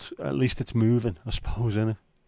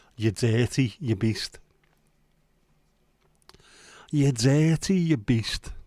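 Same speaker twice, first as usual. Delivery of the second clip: put-on slow Liverpool Scouse accent. Repeating what a talking pigeon says, in a Scouse accent. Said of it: "it says it in a Scouse accent".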